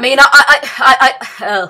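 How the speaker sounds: stuttering. Talking about a favorite cartoon character, the speaker stutters mid-sentence. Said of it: "sorry, uh, I stutter".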